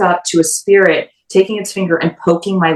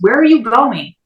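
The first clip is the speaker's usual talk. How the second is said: put-on mild, small yell, pitched up; 5 semitones higher than usual. Retelling what a spirit box voice said while walking away: imitating a loud shout. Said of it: "as loud as possible".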